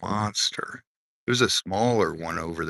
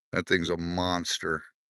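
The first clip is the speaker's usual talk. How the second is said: plain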